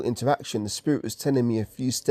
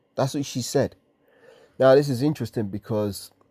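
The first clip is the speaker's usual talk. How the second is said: ordinary talk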